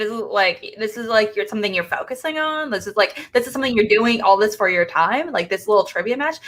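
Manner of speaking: normal talking voice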